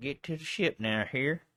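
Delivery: put-on commanding, authoritative Texas accent. Retelling a film captain's order to reach the ship: Slim Pickens voice. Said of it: "you sounded just like fucking Slim Pickens".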